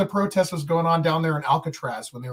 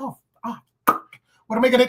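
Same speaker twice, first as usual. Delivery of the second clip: flustered, panicked blurt, acted out; 7 semitones higher than usual. Retelling a moment of panic: imitating own panicked cussing tone. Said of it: "I still made it sound like I did".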